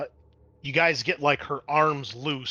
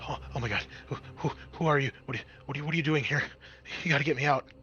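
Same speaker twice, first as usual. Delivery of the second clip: very fast, rushed speech, quieter; 4 dB quieter than usual. Voicing a woman whose mouth was just uncovered, speaking very fast. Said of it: "She starts speaking very fast".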